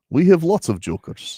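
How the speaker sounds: put-on speaking with Serbian accent. Repeating the quote when asked: imitating a Serbian accent. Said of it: "How did he say that again?".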